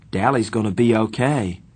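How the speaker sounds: ordinary delivery, nothing marked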